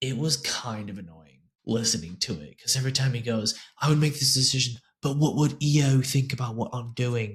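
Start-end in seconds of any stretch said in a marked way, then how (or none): 3.8-7.4 put-on British accent, said in character. Quoting what he keeps saying while reading through, in a british accent. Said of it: "I like that British accent you just had".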